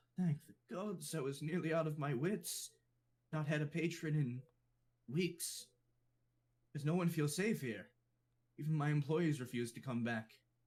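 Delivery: terrified, scared cat-folk innkeeper voice. In an actual-play game, a tabaxi owner of a ghost-troubled building greets the arriving party; scared tabaxi voice. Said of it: "and reveals him as a sort of short and wide orange tabaxi. Pretty fairly peculiar build for tabaxi, the usual lithe and agile race. And his whiskers are manicured like a mustache, perked up, and he's".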